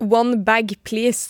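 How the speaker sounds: English spoken in a Norwegian accent. Speaker shows how they talk when going into a shop: Norwegian-English accent. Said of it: "så blir jeg veldig sånn norsk-engelsk".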